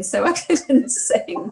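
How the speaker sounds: slow, helpless giggling through the words. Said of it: "I couldn't stop myself laughing".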